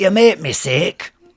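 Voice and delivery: put-on loud, high, scolding Scottish accent. Talking to the cats after being told to try a different accent, Scottish accent. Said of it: "Scottish accent?".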